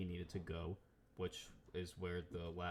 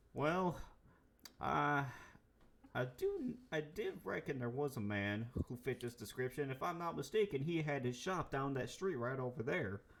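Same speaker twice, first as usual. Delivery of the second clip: put-on drunk outlaw voice with accent, higher; 8 semitones higher, 4 dB louder than usual. Game master voicing a drunk outlaw for the players: drunk outlaw with accent.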